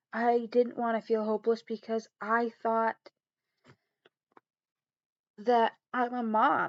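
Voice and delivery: tearful, on the verge of crying. Talking to listeners about feeling hopeless as a mom, fighting tears. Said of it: "I did not want to cry".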